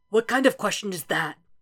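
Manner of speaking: rough, rasping voice through the words. A man lying ill answers a companion's question, in a raspy voice. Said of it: "He rasps".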